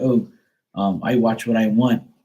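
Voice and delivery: slow, drawn-out, snotty delivery full of attitude. Retelling his reply when questioned about the movie he was watching, imitating his attitude. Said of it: "And he got an attitude".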